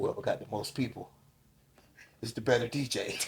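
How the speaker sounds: whispered mutter kept under the breath. Retelling what a fellow dj said at a party: imitating muttering under his breath. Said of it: "Then under his breath".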